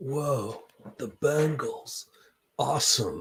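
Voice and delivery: very slow, unhurried, stretched-out words. Reacting to a pick of the Bengals: Keanu Reeves impersonation. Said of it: "my best Keanu Reeves impersonation".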